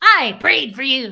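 frightening witch voice, very loud and slow. Retelling a woman's earlier remark to the speaker: witch voice. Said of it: "It was the same thing as the".

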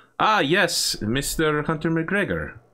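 put-on slight Russian accent. Voicing a character greeting a visitor by name: slight Russian accent. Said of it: "you detect a slight Russian accent coming from her".

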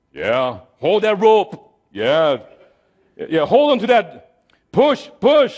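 acted-out, self-assured, slow, confident tone. Imagining the crew confidently working the ropes: imitating confident crew. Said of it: "they're all confident".

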